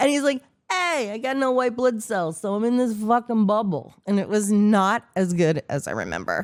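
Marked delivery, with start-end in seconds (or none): 0.7-3.9 put-on New York Brooklyn accent. Recalling a TV character, the speaker quotes him in a Vinnie Barbarino Brooklyn accent. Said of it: "with a Brooklyn accent".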